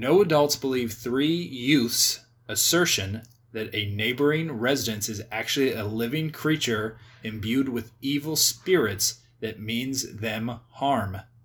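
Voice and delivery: very slow reading aloud, word by word. Reading a movie plot summary aloud to the other speaker, reading very slowly. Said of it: "I don't know why I'm reading this so slow".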